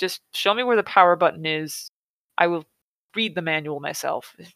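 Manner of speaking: plain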